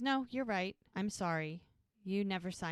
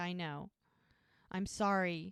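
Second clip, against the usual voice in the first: mock weepy, slow, tearful voice, through crying. Retelling a show scene where a character apologizes: imitating someone crying. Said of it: "she's shaking her head and crying".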